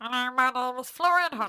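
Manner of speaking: pinched-nose nasal voice. Showing the other speaker how to do the voice, in a pinched-nose nasal voice. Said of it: "Just pinch your nose and you can do it perfectly".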